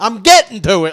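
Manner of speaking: irritated, fed-up, loud, angry snap. Retelling a man's reply to a cop: imitating an angry man.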